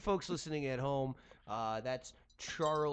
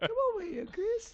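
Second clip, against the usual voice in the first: put-on old man voice, higher and louder; 4 dB louder than usual. Asked to do it, performing a Family Guy old man voice. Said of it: "[name] does the guy from the Family Guy, uh, the, the old man".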